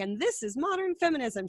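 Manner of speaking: sarcastic, mocking, ironic delivery. Retelling a joke about sexy Halloween costumes: imitating Tina Fey being sarcastic. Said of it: "She's being sarcastic".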